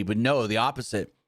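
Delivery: plain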